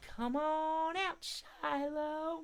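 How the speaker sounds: tiny, sweet, very high, soft voice. Showing everyone how to call out Shiloh the squirrel, in a sweet little voice. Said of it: "call him out in a sweet little voice".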